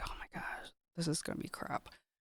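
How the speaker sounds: soft, unvoiced, dreading whisper. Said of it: "And I'm like".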